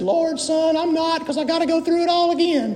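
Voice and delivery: voice pitched way up high. Retelling what Mr. Renzo said, in Mr. Renzo's high-pitched voice. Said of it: "he had this high-pitched voice. He talked like this".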